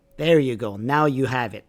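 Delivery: normal talking voice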